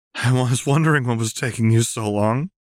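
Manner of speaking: weak, faint laugh running through the words. A girl greets a man who arrives late, with a weak laugh. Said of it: "Lux said with a weak laugh".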